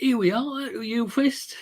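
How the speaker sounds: teasing put-on Cockney accent, high and drawn out. Retelling how he talked at a yule fest, put-on cockney voice. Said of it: "he puts on this Cockney voice".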